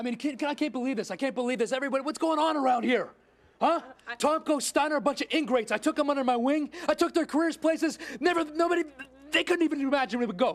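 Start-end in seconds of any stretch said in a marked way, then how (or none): 8.2-10.6 stammering, halting, stuttering, tripping over the words. Complaining in a promo that the people he helped are ingrates, stuttering. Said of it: "Look at me, I'm stuttering".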